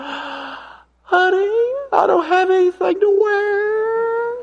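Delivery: tiny, very high, feeble little voice. Asking the men about a wife getting dressed, imitating a little feeble voice. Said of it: "this little feeble voice".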